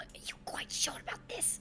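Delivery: pointed, cutting, sharp hushed whisper. Player speaking in character to Bora on the stairs, in a sharp whisper. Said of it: "kind of sharply whisper".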